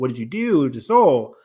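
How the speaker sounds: ordinary delivery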